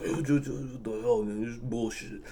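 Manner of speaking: mimicked muttering under breath. Retelling what a honking driver muttered after being told off: retelling a mumble under breath. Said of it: "He was like mumbling under his breath".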